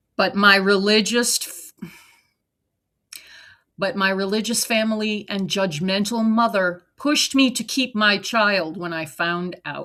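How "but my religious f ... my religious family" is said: ordinary delivery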